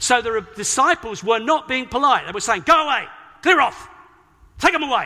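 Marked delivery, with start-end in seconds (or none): 2.7-5.1 loud, high, scornful and dismissive tone. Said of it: "That's the way they were speaking".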